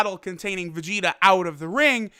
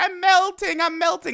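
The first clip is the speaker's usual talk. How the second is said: put-on very high fairy-tale villain voice; 10 semitones higher than usual. Comparing a screaming villain to a melting witch: Wicked Witch of the West impression. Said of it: "the Wicked Witch of the West".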